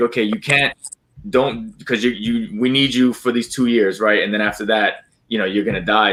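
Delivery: normal talking voice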